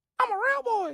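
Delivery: very high-pitched, loud puppet voice. Offering an impression to the other speaker: Pinocchio voice.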